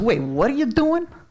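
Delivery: put-on Chicago accent. Speaker retelling what a man asked them, chicago accent impression. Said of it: "I got to imitate his voice".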